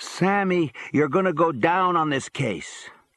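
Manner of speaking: play-acted high, whining, crying voice. Retelling what Eddie said on a visit, imitating Eddie's whining, crying voice. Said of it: "whining one more time with that crying voice".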